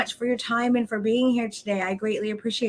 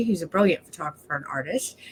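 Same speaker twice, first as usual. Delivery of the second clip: ordinary talk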